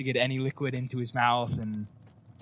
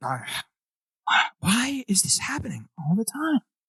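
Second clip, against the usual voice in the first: higher-pitched, wondering aloud to herself; 9 semitones higher than usual. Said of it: "She's kinda just talking to herself".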